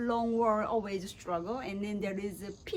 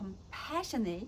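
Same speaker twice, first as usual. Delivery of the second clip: stressing compassionate, quieter; 4 dB quieter than usual. Practicing a reading while a coach gives feedback, stress on compassionate.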